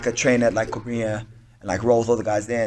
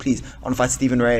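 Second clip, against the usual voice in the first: put-on pleading, begging voice. Retelling asking the manager for a fight in London: imitating own begging. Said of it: "I was, like, begging them".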